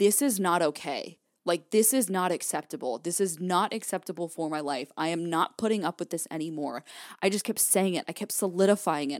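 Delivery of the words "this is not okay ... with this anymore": usual speaking voice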